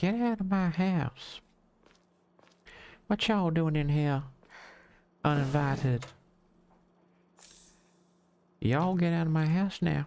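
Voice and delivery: very high put-on Southern belle accent. Ordering uninvited people out of the house: Southern belle accent. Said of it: "I don't know why I've gone Southern Belle".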